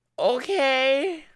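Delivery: high, underwhelmed okay. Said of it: "and just went".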